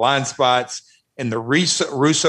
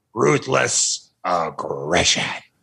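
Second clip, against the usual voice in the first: bad put-on voice, very deep; 7 semitones lower than usual. Doing a quick impression after Vince McMahon is mentioned: terrible Vince McMahon impression. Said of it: "that's a terrible impression".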